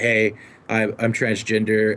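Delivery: ordinary delivery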